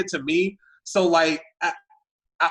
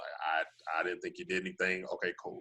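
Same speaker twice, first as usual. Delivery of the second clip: low, fast, hushed mumble.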